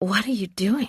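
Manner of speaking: strangled, squeezed-out, barely breathed, choked half-whisper. Reading a story, the narrator asks what he is doing: choked half-whisper. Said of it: "I say in a choked whisper".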